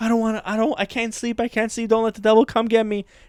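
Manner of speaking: put-on panicky, high, frantic, freaked-out voice. Retelling lying in bed at bedtime: imitating own panicked pleading. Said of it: "freaking out".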